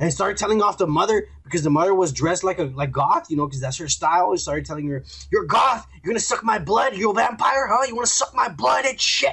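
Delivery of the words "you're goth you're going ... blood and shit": high, crazed, off-the-rails, unhinged tirade. Retelling a man who told off a goth mother, imitating someone acting crazy. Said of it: "he's acting crazy".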